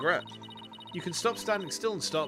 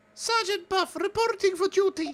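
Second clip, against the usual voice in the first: put-on very thick Russian accent, laid on, high pitched; 13 semitones higher, 5 dB louder than usual. Sergeant Buff introduces themself, Sergeant Buff's thick Russian accent. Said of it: "A very thick Russian accent".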